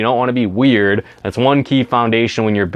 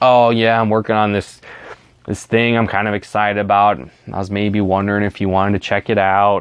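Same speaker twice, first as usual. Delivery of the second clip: lifeless, unenthusiastic, flat, level monotone drone. Illustrating how sounding monotone comes across when asking someone, flat monotone. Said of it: "if you're monotone and you're like".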